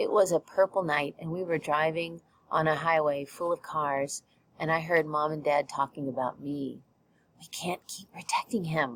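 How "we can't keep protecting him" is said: soft, hushed whisper under the breath. Reading a story aloud, a mother speaking to the father: whispering. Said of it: "Mom whispered to Dad".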